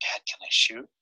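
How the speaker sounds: barely voiced, hushed, breathy whisper. Retelling a hunt, the speaker repeats what the archer asked him: whispered. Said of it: "he whispers to me".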